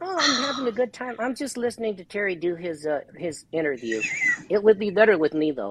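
high-pitched turtle puppet character voice. Asked what's going on during Terry's interview, the puppet replies, turtle puppet voice. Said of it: "Impersonating Turtle".

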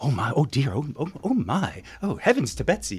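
swooping murmur of a background crowd. Recalling a film scene, imitating the gallery's murmur in the background. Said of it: "That was a perfect".

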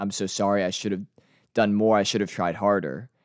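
ordinary talk

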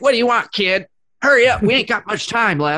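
very high, cranky, grumpy elf voice. Doing an impression of a tired shopping mall Christmas elf: grumpy elf impression. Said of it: "Here's [name]'s elf impression".

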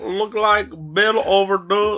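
very high, bad, botched put-on Bangladeshi accent. Mocking a caller from Bangladesh about an overdue bill, the speaker attempts a bad Bangladeshi accent. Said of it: "I can't do that accent".

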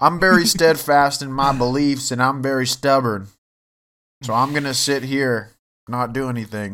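put-on country accent. Playing a stubborn figure asked to say his prophecies: country accent. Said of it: "he got a country accent, too".

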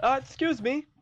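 loud, high-pitched yelling. From inside a barrel, Phyllis calls to anyone outside, yelling out. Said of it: "Phyllis is gonna yell out from the barrel".

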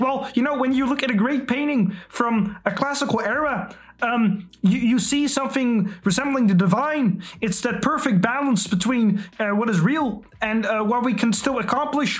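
put-on stressed, tense voice. Mentioning him just to get to do the voice: tense Jordan Peterson impression. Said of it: "because then I could do the voice ... I kind of do the more stressful young Dr. Peterson".

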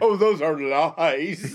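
put-on British voice, very slowly drawled. Imitating the other speaker denying a claim: mock British accent. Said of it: "he gets all British all of a sudden".

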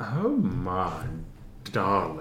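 deep low rumble with the word my drawn out. A character greets someone, in her deep voice rumbling like an ocean. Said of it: "her voice is deep like a rumbling ocean".

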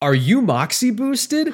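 put-on shrill blurt, very loud and very high-pitched. Retelling what a dude standing in front of him asked, very loudly. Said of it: "goes very loudly".

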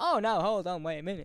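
very fast, rattled-off rhythm. Retelling a scene where the Doctor shows up: the Doctor, very fast. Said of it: "Says that very fast".

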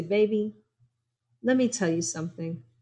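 gentle, sugary, sweet little voice. Speaker recalls a woman sashaying over to offer advice, imitating Miss Gail's sweet voice. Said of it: "in that sweet little voice of hers".

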